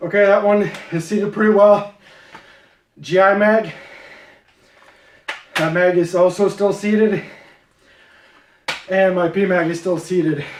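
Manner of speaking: winded, breathless talking, out of breath. After a physical demonstration, the speaker checks equipment while out of breath. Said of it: "let me catch my breath here".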